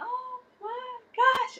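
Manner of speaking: put-on, very high-pitched shrieking scream. Retelling turning the camera around at a game: imitating own screaming. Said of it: "screaming like".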